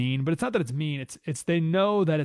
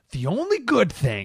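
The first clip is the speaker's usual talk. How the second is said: mock angry dramatic reading, higher; 6 semitones higher than usual. Acting out an angry online comment as a dramatic representation: angry dramatic reading of a comment. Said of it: "let me do a dramatic, uh, a dramatic representation".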